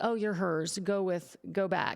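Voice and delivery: put-on dismissive tone. Retelling own past words to a spirit in the guest bedroom: imitating a dismissive tone. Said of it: "I love how dismissive we are".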